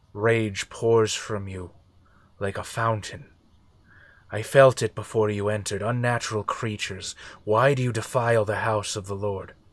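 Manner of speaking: layered chorus of many voices speaking as one. Narrating a scene, voicing a presence that speaks to Gawain, many voices speaking as one. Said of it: "many voices layered on top of one another".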